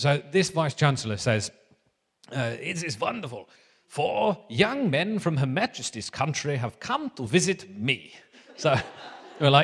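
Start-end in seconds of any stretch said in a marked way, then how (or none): 2.3-8.1 comic put-on German accent drifting into Russian. Retelling a vice chancellor welcoming four young visitors, imitating the vice chancellor's accent. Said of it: "sorry about the accent".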